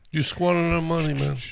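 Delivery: put-on tough-guy Italian accent. Voicing a robot confronting its owner over blown money: Italian mafia guy accent. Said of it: "What if they're an Italian accent like a mafia guy?".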